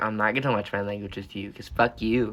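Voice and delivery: ordinary talk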